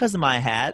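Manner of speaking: ordinary delivery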